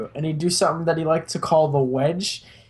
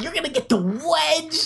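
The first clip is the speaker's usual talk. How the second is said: put-on high-pitched child's voice, sounding threatening; 11 semitones higher than usual. Retelling what a kid at school would say before the wedge: imitating a kid's threat. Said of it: "he just would be like".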